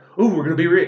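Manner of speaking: mock hyped-up villain voice, very loud and high. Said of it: "he's getting so excited".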